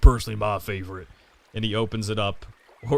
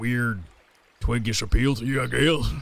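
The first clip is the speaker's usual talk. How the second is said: hulking, big man character voice. Voicing a very large shirtless man greeting the player at a contest: voicing a large shirtless man. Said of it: "and body and goes".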